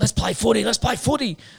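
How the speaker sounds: high, loud, pushy, goading voice.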